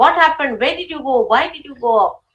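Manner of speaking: put-on scolding tone, shouting. Retelling how a mother shouted at her child: imitating a mother shouting. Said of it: "She just started shouting at her".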